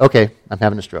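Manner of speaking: ordinary talk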